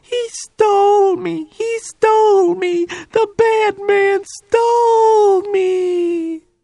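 put-on very high, shrill, bird-like screeching child voice. A kid in a van screams at the roof, screeching in a bird-like voice. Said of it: "screeching at the roof of the van in that bird-like voice".

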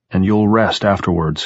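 ordinary delivery

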